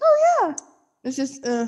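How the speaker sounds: put-on high customer-service voice. Speaker imitates how they'll sound talking to the listener's mom: put-on high customer-service voice. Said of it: "my voice to be up an octave".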